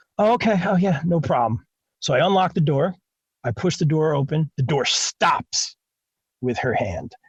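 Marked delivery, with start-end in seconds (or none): 0.2-1.7 fake sleepy voice, pitched higher. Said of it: "She was trying to be like, all sleepy".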